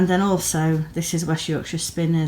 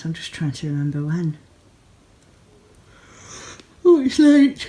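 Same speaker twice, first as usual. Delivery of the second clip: speaking through a yawn, louder; 5 dB louder than usual. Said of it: "I'm sorry, I'm yawning".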